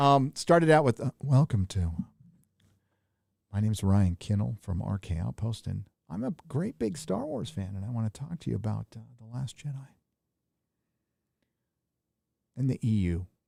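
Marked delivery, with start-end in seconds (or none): 1.2-13.3 put-on hushed voice, quieter. Recalling how their videos first began, the speaker redoes the intro in a put-on hushed voice. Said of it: "we all started out talking like this".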